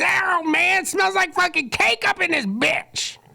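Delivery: very high, creaky, rough little puppet voice. Acting out a puppet popping up on a show: puppet voice. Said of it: "a puppet pops up and goes".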